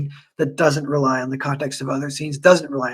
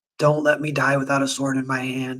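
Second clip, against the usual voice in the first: put-on emotional, pleading voice. Retelling a scene where an old Viking begs to die armed: imitating an emotional plea. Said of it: "pleading with the dude".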